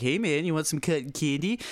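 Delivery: playful joking delivery. Speaker retells joking with a man beside him at the register, acting out a facetious offer. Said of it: "I was just being facetious".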